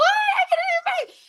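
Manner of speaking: thrilled, very high-pitched, excited squealing delight. Retelling a daughter's reaction to a new bag: imitating an excited daughter. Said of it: "And she was so excited".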